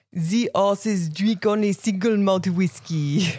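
slow, stately put-on French-accented lady voice.

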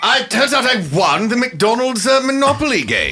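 odd way of speaking. Answering why they came, in a skit: talking funny. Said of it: "He talks funny".

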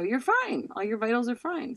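usual speaking voice

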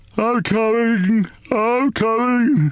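slow, drowsy, drawn-out, high-pitched wail. Woken by battering on the attic door, the father answers in a slow, sleepy wail. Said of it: "He wailed in a slow, sleepy voice".

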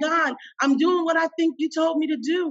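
mock earnest begging. Retelling a prayer after being told to leave: imitating own begging. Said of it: "I'm begging God".

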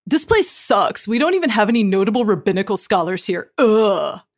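put-on sulky, surly, fed-up teenager griping. Voicing a paraphrase of a man's own writing, in a surly teen voice. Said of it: "That's my that's my surly teen voice".

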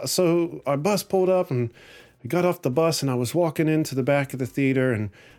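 put-on Irish accent, sing-song lilt. Retelling what he said as he got off the bus, in an Irish accent. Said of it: "Excuse my Irish accent".

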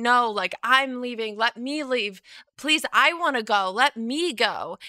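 put-on, screamed, pleading, begging tone. Speaker recounts being thrown on the bed while trying to leave, retelling own screaming. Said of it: "And I'm screaming".

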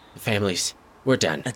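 weak, faint, fading whisper. A fading woman is asked how to stop it and answers in a fading whisper. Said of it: "she's just kind of whispering".

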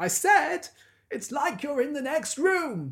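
very high, shrill, loud shouting. Recounting a phone-call scene, the speaker acts out a character, retelling a shout. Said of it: "And he shouts".

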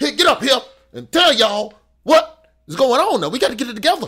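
sudden, very high, loud outburst. Describing a mayor who talked slow then suddenly spoke up, imitating Mayor Langford's sudden outburst. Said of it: "And then for no reason".

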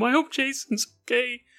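put-on tearful, worried crying voice. Imagining a worried mom at home: imitating a crying mom. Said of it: "She's crying at home".

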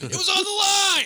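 yelled high-pitched at full force. Asked to do different tennis players, the speaker does a John McEnroe impression. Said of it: "This is John McEnroe".

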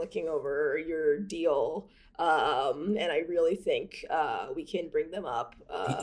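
slow vocal fry, um drawn out. Doing an impression of Doug talking with vocal fry. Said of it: "Doug is gonna be our first straight male president with vocal fry".

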